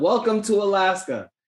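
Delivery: mock shouted, high-pitched, screamed call. Retelling a bazaar scout calling out to tourists: imitating someone screaming. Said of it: "he screams out".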